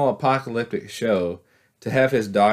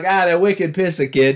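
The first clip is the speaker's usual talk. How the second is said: put-on Boston accent, much higher; 8 semitones higher, 3 dB louder than usual. Joking about how a guard in a scene should have sounded, in a boston accent. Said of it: "a bunch of Boston accents".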